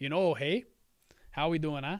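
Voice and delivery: put-on Canadian accent. The speaker announces they are putting on their Canadian hat, in a put-on Canadian accent. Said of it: "I'm putting on my Canadian hat here".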